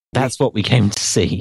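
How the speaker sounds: plain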